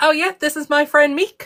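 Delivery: put-on New Zealand accent, high pitch. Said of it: "the accent of the big rock guy in Thor Ragnarok".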